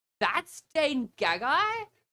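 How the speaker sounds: booming, extremely loud, high call-out. Retelling calling out a player's name once the room went quiet, extremely loud voice. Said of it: "with my extremely loud voice and go".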